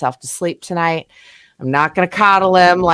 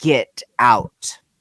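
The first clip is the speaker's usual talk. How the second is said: put-on loud, gruff shouting voice; 5 semitones lower than usual. Retelling waking up in the house to a voice, loud, gruff voice. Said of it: "a very loud, gruff voice saying".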